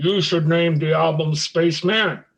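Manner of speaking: mock grand, big-voiced microphone delivery. Retelling how Gene suggested an album name, in Gene's big booming microphone voice. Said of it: "in a big booming microphone voice".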